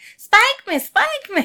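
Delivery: put-on very high, loud, slow, drawn-out Texas accent. Retelling what a woman from a couple kept asking for, texas accent. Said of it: "she had like this Texas accent".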